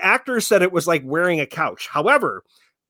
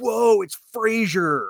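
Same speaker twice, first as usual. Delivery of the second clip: put-on cliché stoner voice; 2 semitones higher than usual. Retelling a movie moment, the speaker quotes a guy in front in a stereotypical stoner voice. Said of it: "this, like, stereotypical stoner voice".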